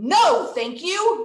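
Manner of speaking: loud, properly angry delivery. Saying the practice sentence for listeners to repeat at home, angry. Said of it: "We have to sound angry when we say this one".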